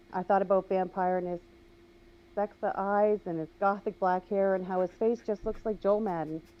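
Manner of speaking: ordinary delivery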